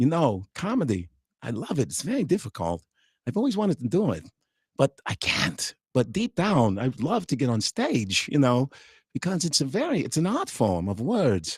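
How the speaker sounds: animated voice with pitch swooping widely all over. Showing how to do Christopher Walken, grounded impression. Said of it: "So that's how I do it".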